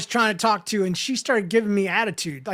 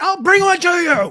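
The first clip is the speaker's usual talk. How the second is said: imitated man screaming, higher and louder; 9 semitones higher, 8 dB louder than usual. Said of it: "this old man with the blue vest screams at me".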